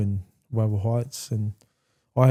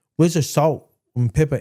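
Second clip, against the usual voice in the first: put-on, demanding, proper English accent, pitched up; 5 semitones higher than usual. Recalling a demanding man at the dinner table, the speaker quotes him in an English accent. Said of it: "in his English accent".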